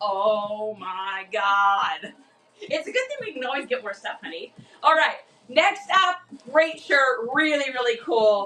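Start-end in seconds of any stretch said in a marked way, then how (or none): 0.0-2.1 low, dismayed exclamation with "Oh" dragged out. Showing how Justin reacts to a low price: imitating Justin. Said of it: "Every single time".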